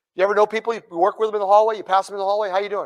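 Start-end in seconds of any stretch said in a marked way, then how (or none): 1.8-2.9 monotone, flat, uninflected pleasant tone. Imitating coworkers passing in the hallway, fast and flat. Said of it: "fast rate, low inflection... they talk like this".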